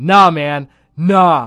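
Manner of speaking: loud screaming. Retelling a fight in a bathroom, imitating a man screaming. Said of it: "some dude screaming".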